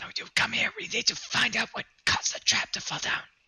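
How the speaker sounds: loud yell-whisper pitched very high. Calling a companion over to investigate a fallen trap: yell whispering. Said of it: "You're yell whispering".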